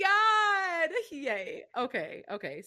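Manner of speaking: giddy and flustered. Reacting on a call as her wildest dreams come true: giddy and blushing.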